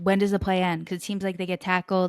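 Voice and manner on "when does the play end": plain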